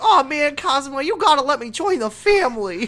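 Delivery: put-on very high, helium-like little baby voice. Quoting a game character's line while discussing its voice acting, in a little baby voice. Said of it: "He's doing a little baby voice".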